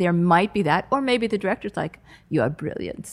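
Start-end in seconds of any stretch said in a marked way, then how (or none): 2.3-3.1 put-on vampire voice, lower and quieter. Imitating an imagined director praising the writer: Dracula voice. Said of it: "I don't know why he has an accent, why he sounds like Dracula".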